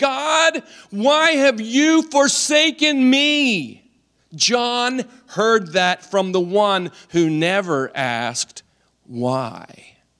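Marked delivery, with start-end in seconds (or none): 0.0-3.8 put-on agonized, anguished crying out. Retelling what John heard his Lord cry out on the hill, retelling an agonized cry. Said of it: "in an agonizing voice cry out".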